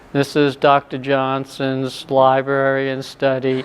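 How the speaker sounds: very monotone, slow, flat, level delivery. Retelling an older woman introducing Doctor Johnson's library, flat monotone. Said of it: "And that tone of voice. And it was very monotone".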